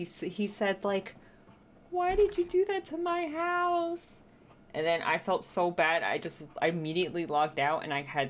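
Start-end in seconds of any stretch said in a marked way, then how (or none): 1.9-4.2 put-on small child's voice, much higher, slower. Retelling what a little kid said after the raid, in a small child's voice. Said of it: "this little kid in his little voice".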